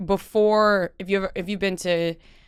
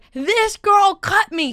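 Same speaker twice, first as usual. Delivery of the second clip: put-on high, slow, stretched-out old woman shriek; 12 semitones higher, 4 dB louder than usual. Telling a story about a woman pointing and accusing them: imitating a screaming old lady. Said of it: "screaming to everybody".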